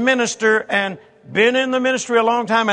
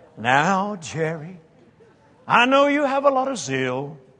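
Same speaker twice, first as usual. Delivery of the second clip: put-on churchy preacher tone, very slow and drawn-out; 4 semitones lower, 3 dB quieter than usual. Imitating a man advising the speaker about zeal, put-on religious tone. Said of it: "he could turn on that religious tone".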